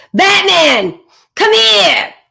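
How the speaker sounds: very high, shrill, loud, off-putting, unseductive call. Showing a non-seductive way to call Batman over: repellent, unseductive tone. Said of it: "That's not a seductive quality, right? Would you say more of a repellent tone?".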